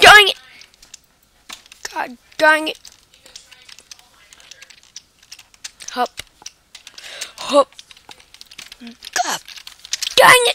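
exasperated, angry, frustrated outbursts. Gamer failing a jump on the last stage, angry, frustrated outbursts. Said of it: "I'm so angry right now".

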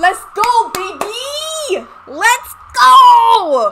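very loud, very high, stretched-out screaming cheer. Streamer celebrating an unexpected first win in a racing competition, screaming. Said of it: "I'm sorry if I'm screaming in everyone's ear right now".

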